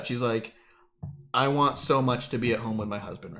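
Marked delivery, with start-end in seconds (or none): 1.3-3.4 put-on choked-up voice, lower. Retelling Beth's speech at the opening of NXT: imitating Beth choked up. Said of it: "starts, like, choked up".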